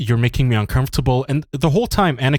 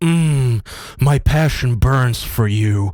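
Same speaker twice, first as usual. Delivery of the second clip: creepy put-on lovestruck voice. Retelling a movie scene, imitating Anakin creepily staring: creepy Anakin impression. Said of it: "Anakin just keeps creepily staring at her like".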